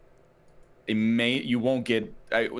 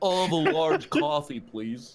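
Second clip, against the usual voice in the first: put-on American impression. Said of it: "Just my American impression".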